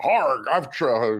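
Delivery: put-on voice, faltering and fizzling out. Reading a comic strip's dialogue aloud as Dagwood: Sean Connery voice. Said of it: "I'm trying to do Sean Connery".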